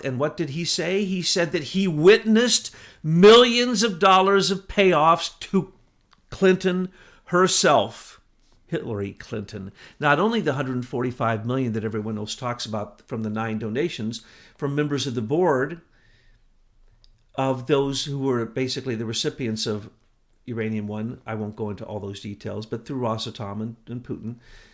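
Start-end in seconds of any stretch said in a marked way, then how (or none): 1.0-8.2 loud, slowed-down yell. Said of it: "sorry I yelled so much".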